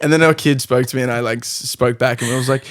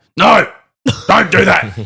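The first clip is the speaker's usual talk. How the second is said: mock bossy commanding voice, higher and louder; 5 semitones higher, 6 dB louder than usual. Imitating own manner when being rough: imitating own commanding tone. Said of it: "I'm pretty rough".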